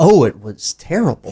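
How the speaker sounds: matter-of-fact, plain, outright declarative delivery. Recalling exactly how Chuck said it, imitating Chuck's exact intonation. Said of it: "Chuck's exact intonation on on how he said that".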